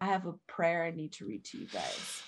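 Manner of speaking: mock dark, portentous, ominous foreboding voice. Retelling a mother announcing a prayer: imitating an ominous tone. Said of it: "Why did she say it so ominous?".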